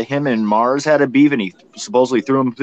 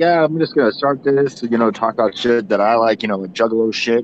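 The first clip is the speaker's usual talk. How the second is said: plain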